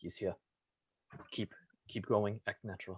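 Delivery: hushed whisper, very quiet. Voicing a character warning a companion while pushing him in: whispering in character. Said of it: "I'm going to whisper to him".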